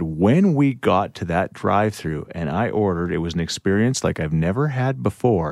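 plain

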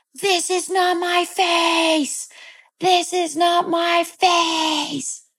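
shrill, very high, frantic yelling, acted out. Recounting clawing at their own face as a child, the speaker reenacts yelling.

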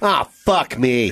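acted groan of utter disgust. Acting out a mom looking at her kid: imitating complete disgust. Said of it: "Complete disgust".

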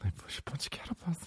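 fake ASMR whisper voice. Imitating someone doing an ASMR video: Mark Wahlberg doing ASMR. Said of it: "you know what Mark Wahlberg's doing? A S M R when he talks".

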